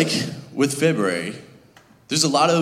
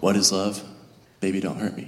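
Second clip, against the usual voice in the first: mock spooky, unsettling, creepy, eerie tone; 5 semitones lower, 3 dB quieter than usual. Retelling answering people who ask the series name: mock creepy delivery. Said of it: "say it more normally and not so creepily".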